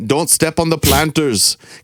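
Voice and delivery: put-on German accent. Retelling what an old man at church yelled: imitating a German accent. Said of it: "you just gave him, like, a German, Germanic accent".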